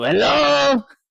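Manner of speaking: shouting. Calling out in character inside a cave, yelling. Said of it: "I'm going to yell".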